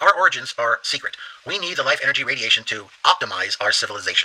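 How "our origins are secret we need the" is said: ordinary delivery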